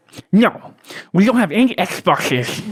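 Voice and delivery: high, swooping, over-the-top nerdy clerk voice. Recalling the manager's reply when asked about the new Xbox, nerdy over-the-top manager voice. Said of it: "very comic book guy".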